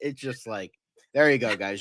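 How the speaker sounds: normal talking voice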